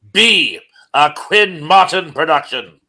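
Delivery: weak put-on voice, slow, high. Announcing a show title: weak William Conrad voice. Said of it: "in my very weak William Conrad voice".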